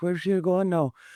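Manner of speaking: put-on high-pitched, heavy Scottish accent. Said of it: "Heavy Scottish accent".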